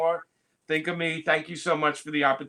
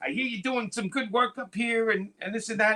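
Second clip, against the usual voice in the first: put-on elderly man voice, pitched higher; 6 semitones higher than usual. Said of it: "that's a top-notch Stan impression".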